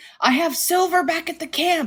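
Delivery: shouting. Voicing a character running behind the players: Schmidt yelling. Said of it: "you hear Schmidt yelling".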